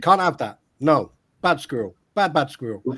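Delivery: stern serious voice. Addressing the audience and a person called Squirrel, mock-serious voice. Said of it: "Serious voice".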